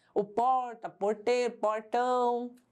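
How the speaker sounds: retroflex caipira R in porta and portão. Explaining Brazilian accents, demonstrating the caipira curled R in porta, porteiro, portão. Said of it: "tem o famoso R caipira".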